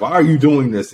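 plain

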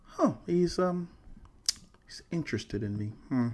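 high, curious, flattered, intrigued musing. Acting out the woman's reaction to his approach: imitating a woman's intrigued reaction. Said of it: "She'll be like".

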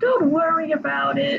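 bad, half-hearted, barely-tried cartoon voice. Discussing character pairings, the speaker quotes Mickey talking to Riku, in a terrible Mickey voice. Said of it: "That was a terrible Mickey voice".

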